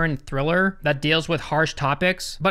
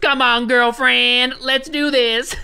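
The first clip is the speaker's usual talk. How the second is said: put-on southern twang, loud and drawn out; 7 semitones higher, 6 dB louder than usual. Recapping a story where a woman breaks into a home, put-on southern twang. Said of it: "puts on a southern twang randomly".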